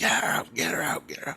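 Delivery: mock frantic, urgent, breathy whisper, repeated. Speaker acts out their subconscious reacting to her, imitating own subconscious screaming. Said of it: "My subconscious is screaming".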